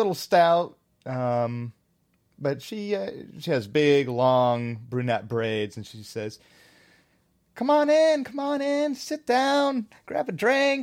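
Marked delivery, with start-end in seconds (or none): 7.6-10.8 very high, cheery, lovey-dovey sweetness. Voicing a tavern keeper welcoming the party in: cheery, lovey-dovey tavern keeper. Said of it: "very cheery, kinda lovey-dovey".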